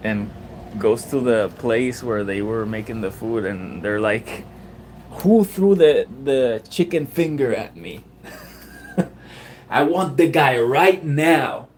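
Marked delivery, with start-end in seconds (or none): 5.1-11.6 mock furious, angry, insistent, demanding tone. Retelling what a guy said after something was thrown at him: imitating an angry guy. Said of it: "the guy gets super angry".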